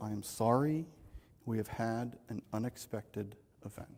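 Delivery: grave, very solemn, hushed tone. Retelling what a man told four people on a rooftop, imitating a solemn tone. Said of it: "in his most solemn tone".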